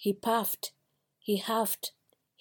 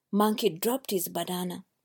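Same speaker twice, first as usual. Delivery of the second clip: usual speaking voice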